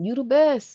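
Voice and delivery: high-pitched radio DJ voice. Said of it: "my [name] voice".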